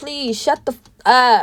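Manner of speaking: earnest, pleading, put-on tone. Retelling how two people begged another to calm down: imitating someone pleading. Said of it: "literally pleading with this girl".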